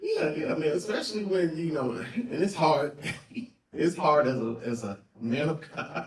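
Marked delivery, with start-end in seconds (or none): 2.1-6.1 holding back laughter mid-sentence. Talking about something serious while trying not to laugh: laughing while talking. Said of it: "I'm trying not to laugh".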